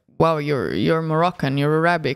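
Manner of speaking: usual speaking voice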